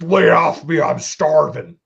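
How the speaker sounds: loud, rough, slow, drawn-out bellow. Repeating the line to argue it was a Chris Farley impression. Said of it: "what Jesse Ventura sounds like versus Chris Farley".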